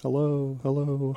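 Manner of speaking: sexy, sultry, seductive voice. On a radio show, showing off voice effects: sexy voice. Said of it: "I can make my voice sound sexy".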